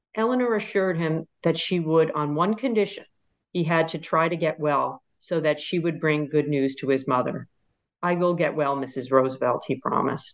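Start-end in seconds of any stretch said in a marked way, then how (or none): none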